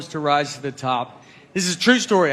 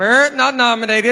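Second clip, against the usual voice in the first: parrot voice, higher pitch; 7 semitones higher, 5 dB louder than usual. Talking about presenting at the Golden Globes, cutting in with a parrot voice. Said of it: "in a parrot's voice".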